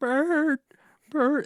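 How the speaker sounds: very high, distressed, upset crying out. Recounting a scene, the speaker acts out Ernie crying out for Bert. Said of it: "he's just like crying out for like".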